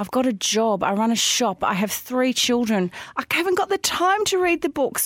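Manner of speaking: crying, high-pitched, tearful pleading. Retelling a terrifying incident, imitating own crying while pleading. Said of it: "And I'm crying".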